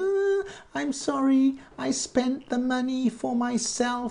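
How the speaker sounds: put-on very high-pitched, baby-like crying and blubbering. Retelling a corrupt politician's apology on TV: mock crying like a baby. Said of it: "crying like a baby on television".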